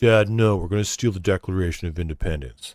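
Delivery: brooding, lisping put-on voice. Talking about impressions, the speaker does a brooding Nicolas Cage impression. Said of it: "that's the same kind of like brooding style voice".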